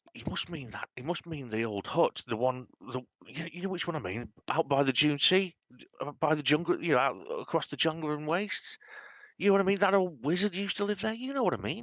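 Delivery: high, carrying, bad stage whisper. Telling Dave about people sitting down, imitating their terrible half-whisper. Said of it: "all of you hear in this terrible whisper".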